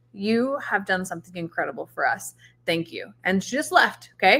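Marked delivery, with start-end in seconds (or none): 0.2-3.1 rapid, hushed stage whisper, close up. Retelling what someone half-whispered in their ear: imitating a half-whisper. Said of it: "she whispered in my ear really quick".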